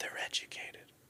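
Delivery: hushed, whispered private aside. Retelling what a Pashtun man said about his girls: imitating a whisper. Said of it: "whispered it to me".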